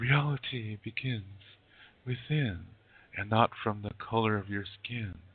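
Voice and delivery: mock overly dramatic, poetic, theatrical delivery. Mocking how a certain group talks, mock overly dramatic. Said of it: "They're always overly dramatic in the way they talk".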